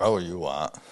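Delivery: blunt, rough, gruff workman's voice. Retelling a carpenter's reply when asked for work: imitating a gruff man. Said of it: "he was a rough and gruff guy".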